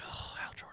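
irritated whispering. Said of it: "he can be all annoyed".

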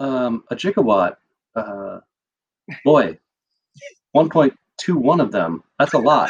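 subdued, low delivery. Imagining how a casting pick would say the line: Jeff Goldblum impression, subdued. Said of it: "way more subdued, where he'd be like".

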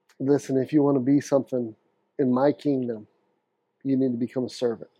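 plain

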